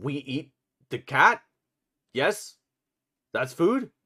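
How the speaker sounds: loud, wolf-like beast voice. Voicing a character who speaks to Kurgis at the table, in a loud wolf-like voice. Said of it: "in a loud wolf-like voice".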